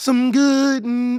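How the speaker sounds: breaking, cracking voice, cracks mid-word. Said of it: "it cracked on that one".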